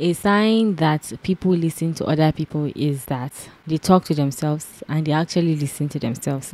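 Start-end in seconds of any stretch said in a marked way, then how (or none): none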